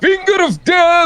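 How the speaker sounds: booming, loud, very high-pitched shouted cry. Casting a spell in the game: dramatic spell shout. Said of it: "I love how you say that like".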